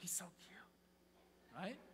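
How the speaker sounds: very slow, drawn-out, breathy whisper. Showing the audience how girls whisper to a friend: girl whispering to a friend. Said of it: "you girls, you whisper".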